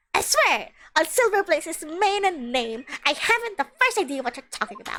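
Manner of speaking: high-pitched, gremlin-like little creature voice. A character told to explain himself protests innocence, in a high-pitched gremlin voice. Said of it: "All the voices are just going to that gremly high-pitched voice".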